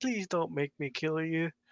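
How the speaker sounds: imploring, earnest, begging pleading tone. Retelling a comic scene, imitating a heroine pleading with Superman.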